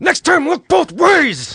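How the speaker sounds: very high-pitched, mock angry scolding tone. Joining in on acting angry at the dead animals, mock-angry scolding. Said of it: "act very angry with the animals".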